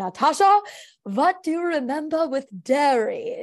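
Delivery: put-on heavy, thick German accent. Acting out your mom asking you about dairy over a glass of milk, very strong German accent. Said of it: "very strong German accent".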